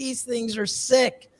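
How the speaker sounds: high, slow, drawn-out awed delight. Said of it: "I'm like".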